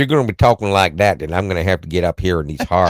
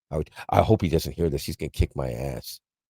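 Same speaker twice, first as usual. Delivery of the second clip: plain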